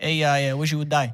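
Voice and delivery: put-on New Jersey accent. Acting a scene as a New Jersey guy: New Jersey guy voice. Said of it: "She's, like, some New Jersey guy".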